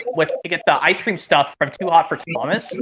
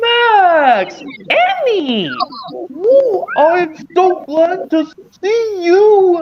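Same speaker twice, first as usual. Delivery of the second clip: very high, slow, drawn-out raised voice on name; 14 semitones higher, 5 dB louder than usual. Doing one impression before ten o'clock: Dragon Tales impression. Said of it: "how about this impression where it goes".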